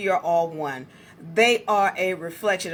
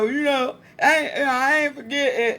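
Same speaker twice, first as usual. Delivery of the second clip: put-on slow, drawn-out drunk man's voice; 11 semitones higher, 4 dB louder than usual. Retelling a drunk man's reply after being yelled at, imitating a drunk man. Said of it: "he was drunk as hell".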